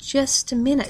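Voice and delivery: wavering delivery. Narrator reads the daughter at the door as policemen arrive, speaking unsteadily. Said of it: "she said unsteadily".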